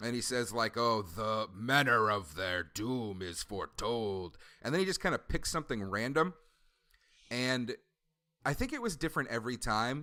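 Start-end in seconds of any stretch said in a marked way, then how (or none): 0.8-4.4 cavernous, very deep, very slow, doom-laden voice. Retelling what a figure says after a sacrifice is chosen, in a very deep voice. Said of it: "he has got a very deep voice".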